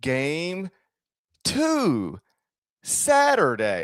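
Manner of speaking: very slow, drawn-out, "two" stretched long. Demonstrating how their podcast from 2001 sounded, very slow talking. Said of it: "We'd just be talking so slow".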